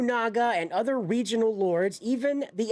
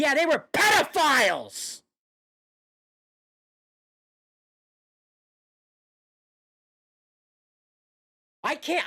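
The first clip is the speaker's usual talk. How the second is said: furious, higher pitched; 4 semitones higher than usual. Reacting to a video about samurai history: angry. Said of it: "I'm so angry right now".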